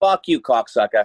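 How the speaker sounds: put-on heavy Boston accent. Speaker repeats a line from their own acting role, and another person praises the accent, in a thick boston accent. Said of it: "I do the fucking Boston accent the whole time".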